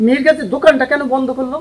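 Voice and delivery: ordinary delivery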